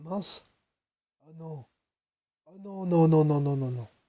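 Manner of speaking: rasping, hoarse, half-gone voice giving out. Reacting to a sudden loss of voice while recording: lost voice, hoarse. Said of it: "Ah bah j'ai plus de voix".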